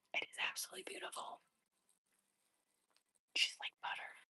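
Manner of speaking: hushed, very quiet, barely voiced whisper. Admiring a piece of clothing while trying it on, whispering. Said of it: "I feel like I have to whisper".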